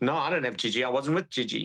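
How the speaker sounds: ordinary talk, nothing marked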